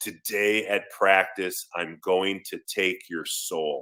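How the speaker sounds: extremely slow and totally serious. Retelling a teammate's threat at lunch: serious, imitating John Randle. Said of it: "he looks at me all serious, and he says".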